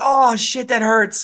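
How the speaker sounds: high-pitched, pained screaming. Retelling getting hurt at a gas station, acting out a pained scream. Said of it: "I'm like I'm screaming in the gas station parking lot".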